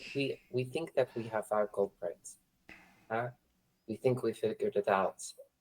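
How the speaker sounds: very hushed, quiet voice brought right down. Leaning in to share news of a culprit: lowered voice, leaning in. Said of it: "lower my voice and get, like, in a little bit".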